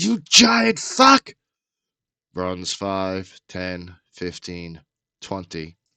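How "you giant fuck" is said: shrill, very loud, high-pitched top-of-the-lungs scream. Narrating a scene where a human mercenary screams at an eight-foot-tall guy, screaming. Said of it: "screams out".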